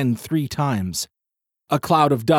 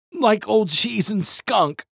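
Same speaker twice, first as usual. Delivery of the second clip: high-pitched groaning while dry heaving; 8 semitones higher than usual. Reading the narrator near the creature's carcasses, groaning while dry heaving. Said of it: "I groaned, dry heaving".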